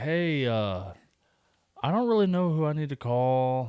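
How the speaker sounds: offhand, totally unbothered, casual nonchalant tone. Retelling a coworker's phone call about his house fire: imitating a nonchalant tone. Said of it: "just, like, real nonchalant".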